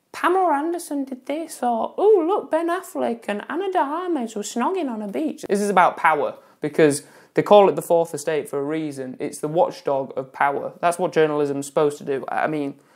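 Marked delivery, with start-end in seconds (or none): 0.1-5.4 very high, affected, sneering, mocking voice. Discussing investigative journalism, brushing off celebrity gossip in an affected voice. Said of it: "[affected voice]".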